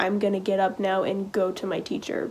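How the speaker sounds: usual speaking voice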